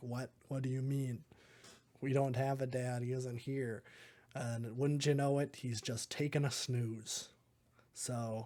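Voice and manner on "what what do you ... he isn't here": ordinary talk, nothing marked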